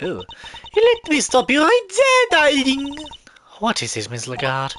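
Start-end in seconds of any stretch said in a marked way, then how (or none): 0.0-3.0 put-on light French accent. Voicing the accused interrupting the prosecution: Phoebe Lagarde voice, light French accent. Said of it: "that's the voice I'm gonna give to her".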